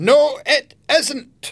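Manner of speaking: very high, shrill, shouted cry. A woman on the edge of a ship contradicts the others, shouted. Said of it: "a voice shouted".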